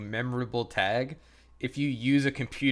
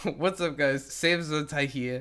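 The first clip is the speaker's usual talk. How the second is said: stumbling, tongue-tied, tripping over words; 3 semitones higher than usual. Retelling a friend's old video intro, imitating Save tripping over words. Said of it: "he just completely trips over the words".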